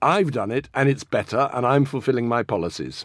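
ordinary talk

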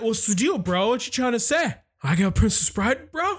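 mock tough-guy bravado. Retelling own past words to his mom: imitating macho insecure tone. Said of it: "I just got all macho and insecure".

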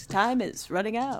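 very high, promo-style radio announcer voice. Urging listeners to send questions: radio announcer voice. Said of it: "Radio announcer voice for some reason".

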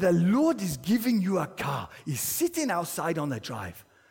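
put-on Nigerian English accent. Quoting a man from church, imitating a Nigerian accent. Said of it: "He was from Nigeria, not Wales".

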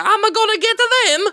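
very high, squeaky cartoon Italian accent. Redoing a voice nobody could place, as a Mario voice. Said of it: "I think that was Mario".

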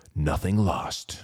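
deep Hollywood movie trailer narrator voice. Podcast host repeats a phrase for effect near the episode's end, in a Hollywood trailer voice. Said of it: "Got to say it with a Hollywood trailer voice".

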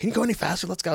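put-on, very high, urgent screaming. Retelling how people yelled at the EMTs: imitating people screaming at EMTs. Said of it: "They're screaming at the E M Ts".

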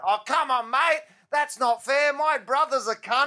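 very high-pitched, loud yelled shout. Retelling how a voice from the back of the room yelled out; retelling a heckler's yell. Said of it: "this voice just yells out".

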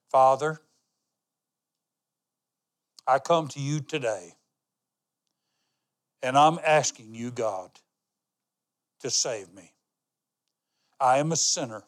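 slow, deliberate prayerful delivery. A speaker leads listeners in a prayer to repeat along, saying it slowly. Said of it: "I'm going to say it slow".

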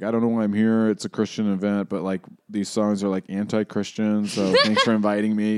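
acted gloomy, depressed, super sad delivery. Retelling a musician's remark at an art night: imitating a super sad, depressive tone. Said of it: "he's in his super sad, depressive state".

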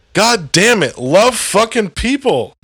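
worked-up, amped-up, high-pitched outburst. Ranting to another speaker, amped up. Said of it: "I'm amped up right now so bad".

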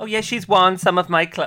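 put-on loud, slipping into an American accent. Quoting a woman's remark, the speaker slips into an American accent. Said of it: "why am I speaking in American accent?".

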